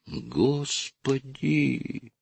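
frightened, fearful mutter, soft and high. Reading a novel aloud, a woman reacts to news of a murder with a frightened mutter. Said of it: "испуганно пробормотала женщина".

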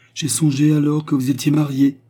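brusque. Narrator reads a woman's remark to Fernand, said brusquely. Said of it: "dit-elle brusquement".

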